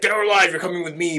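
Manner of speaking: high, robotic, machine-like voice. Describing the new RoboCop movie, quoting the hero in RoboCop robot voice. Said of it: "but in a robot voice".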